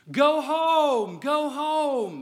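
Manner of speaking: very slow, very high yell with home stretched. Retelling a dad shouting to a young runner rounding second base, retelling dad's shout. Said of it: "is shouting to Samuel".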